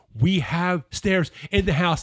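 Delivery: put-on full, loud, high yell. Retelling a husband yelling at his wife about the Stairmaster: retelling a yell. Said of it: "yelling at his wife about the Stairmaster".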